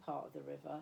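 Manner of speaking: plain reading voice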